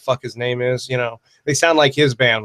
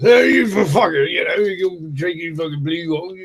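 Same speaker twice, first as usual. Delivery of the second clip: high, slow Cockney accent, drawing out "you"; 5 semitones higher than usual. Repeating your own line in your put-on cockney voice. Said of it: "I should do that in my Cockney voice".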